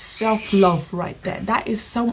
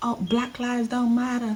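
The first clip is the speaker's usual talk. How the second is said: put-on borrowed American accent; 2 semitones higher, 4 dB quieter than usual. Imitating what a young boy said: put-on american accent. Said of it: "My American accent".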